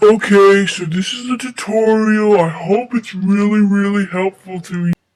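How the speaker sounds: small, exaggerated put-on deep voice. Showing how guys in tutorial videos talk: a little deep voice. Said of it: "do a little deep voice here for you".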